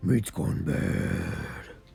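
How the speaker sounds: hushed, low, under-the-breath mutter to oneself. Playing dead as the dragon approaches, muttering under the breath. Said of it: "I say under my breath".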